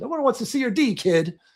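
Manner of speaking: high-pitched yelling. Describing a movie scene where a man yells at a kid, retelling a yell. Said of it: "he yells at him like".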